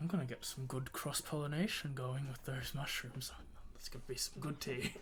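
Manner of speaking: hushed, half-whispered aside. Acting out what a man half-whispers as he hands over a plate, half-whispering. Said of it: "he whispers like".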